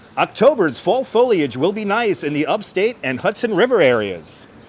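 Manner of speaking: ordinary talk, nothing marked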